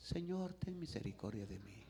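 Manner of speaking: mock timid pleading, soft and quiet.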